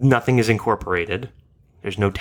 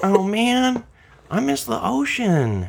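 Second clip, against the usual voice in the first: put-on laid-back surfer dude voice, higher; 13 semitones higher than usual. Voicing the desert as played by Owen Wilson: Owen Wilson voice. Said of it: "the desert is played by Owen Wilson here".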